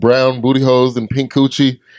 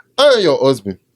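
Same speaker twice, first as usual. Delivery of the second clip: attempted, put-on Nigerian accent. Showing the one line that works in a put-on Nigerian accent. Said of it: "The only thing I can say with a Nigerian accent".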